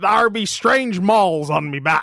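slow, stagey put-on pirate voice. Telling a joke about a pirate at the doctor's, voicing the pirate. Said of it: "Pirate goes to the doctors".

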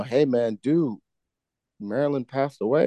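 ordinary talk

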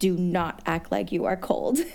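words forced out through clenched, gritted teeth. Recalling cheering in the cold, imitating her coach through gritted teeth. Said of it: "gritting her teeth".

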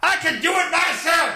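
acted-out angry tone, very high and drawn out. Retelling how a woman became angry and refused police help: imitating an angry refusal. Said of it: "the woman reportedly became angry with them and refused help".

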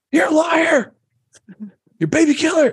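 very high-pitched, jeering, heckling crowd scream. Telling a story about everybody screaming at a general, imitating a screaming crowd. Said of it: "everybody starts screaming at him".

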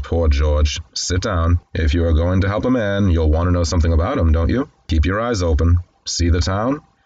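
ordinary delivery

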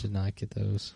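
low, quiet, slightly downcast, dejected voice. Talking about chocolate coins he never got, a little dejected. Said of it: "He sounded a little dejected".

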